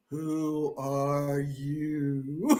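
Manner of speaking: scary, spooky, low, hushed gravelly voice. Telling what she heard first on a tape left running overnight, imitating a gravelly spooky voice. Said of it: "gravelly, scary, spooky voice".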